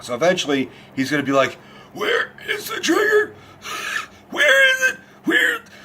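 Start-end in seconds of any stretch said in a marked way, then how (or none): 1.9-5.6 very high-pitched barking delivery. Explaining what barking does to the voice, imitating Bale's damaged voice. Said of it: "screaming and barking like Bale does will damage your voice".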